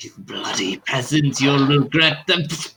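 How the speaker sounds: high, rasping, rough-edged, threatening voice. Voicing a Dracian man in the scene as he speaks, in a rasping voice. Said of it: "his like rasping voice says".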